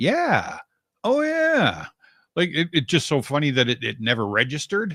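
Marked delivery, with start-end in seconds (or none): 0.0-1.8 high, sudden dawning realization. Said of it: "I was like".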